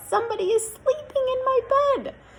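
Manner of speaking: put-on very high squeaky baby voice. Narrator reading the Goldilocks story, voicing Little Bear in a squeaky baby voice. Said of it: "squeaky baby voice".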